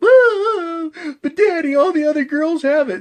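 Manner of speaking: play-acted very high, loud, tearful crying wail. Acting out a little girl begging her daddy: mock crying plea. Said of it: "And she starts crying".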